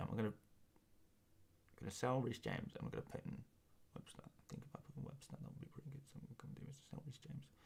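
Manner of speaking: whispered, very quiet, hushed under the breath. Streamer addressing viewers during a stream, speaking very quietly. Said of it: "I'm going to say it very quietly".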